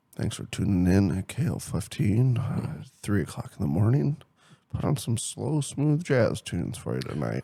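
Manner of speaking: put-on soft, deep late-night radio dj voice. Close to the mic, playing a late-night radio host, soft deep radio voice. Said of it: "I get like kind of soft voice".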